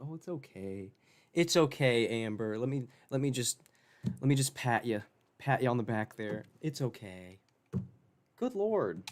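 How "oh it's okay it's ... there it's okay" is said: mock comforting tone, sarcastic. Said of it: "try and make us feel bad for you and be like".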